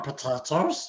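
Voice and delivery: spooky, movie-style creepy creature voice. Showing off a voice while discussing an actor's voice roles: Gollum voice. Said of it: "Man, that was really good".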